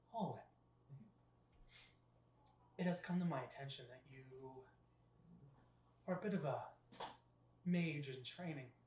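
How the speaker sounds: sultry, smoldering, alluring voice. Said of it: "you hear a like a sultrous voice".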